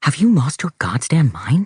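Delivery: hissed words. Reading a story, one mother hisses at the other during their argument: hissing. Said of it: "Lark's mother hisses".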